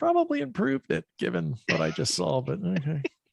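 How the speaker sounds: mumbled quietly to oneself. Playing his character after hearing a wife yell, muttering to himself. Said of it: "I kind of mutter to myself".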